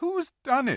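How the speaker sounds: sudden, startled crying out. Narrating a story, voicing one of the children; cried out. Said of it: "Cried Susan".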